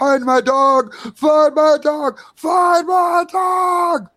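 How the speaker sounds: put-on very high, slow, drawn-out childish tantrum screaming. Describing a man who screams at you like a child, imitating a screaming tantrum. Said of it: "He's screaming".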